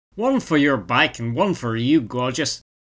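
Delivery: put-on southern Irish accent. Narrator voicing the girl behind a petrol station counter, Southern Irish accent. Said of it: "in her beautiful Southern Irish accent".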